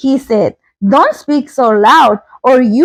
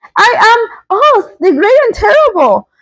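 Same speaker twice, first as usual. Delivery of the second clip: high-pitched, quavering, shaking, trembling voice; 9 semitones higher than usual. Reading a story aloud, give the little man's reply to the Tin Woodman in a trembling voice. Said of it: "said the little man in a trembling voice".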